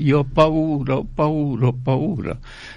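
sobbing, crying shout full of terror. Speaker recalling an old man gripping the priest's hand at last rites: imitating crying, shouting in fear. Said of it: "si mise a piangere, gridando".

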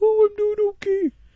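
very high, loud, cute puppy voice. Voicing the dog answering back in conversation, cute puppy voice. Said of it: "answers me back in a cute puppy voice".

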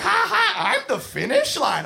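put-on gleeful, high, giggling kid voice.

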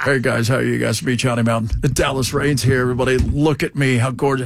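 mocking weatherman voice, pitched very low. Mocking a TV weatherman who greets viewers: imitating Dallas Raines. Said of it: "'Cause that's what he was like, too".

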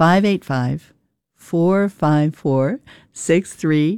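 a little slowed down. Repeating the call-in number for listeners, a little slower. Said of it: "I'll say it a little slower".

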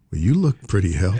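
plain

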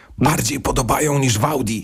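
whispered, hushed. Speaker reviewing a car, confiding a whispered aside. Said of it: "szeptem to powiem".

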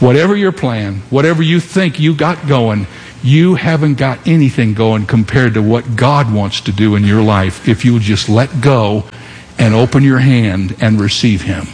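usual speaking voice

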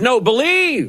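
believe stressed, high pitch, slow.

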